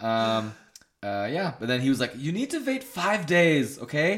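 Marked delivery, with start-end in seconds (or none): 2.2-4.2 German-sounding doctor voice, pitched up. Retelling the doctor's instructions: imitating the doctor, accent sounding German. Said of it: "This is really sounding German now".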